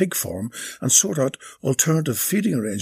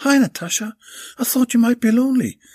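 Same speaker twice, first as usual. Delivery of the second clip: cheery, bright, very high-pitched voice; 10 semitones higher, 3 dB louder than usual. Belinda turns up at natasha's door to keep her company: brightly. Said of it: "said Belinda brightly".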